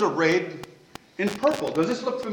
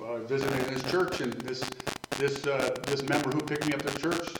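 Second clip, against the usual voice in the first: low, deep, raspy preacher-style voice. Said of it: "in that deep, raspy voice".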